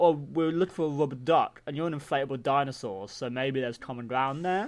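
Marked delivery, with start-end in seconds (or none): none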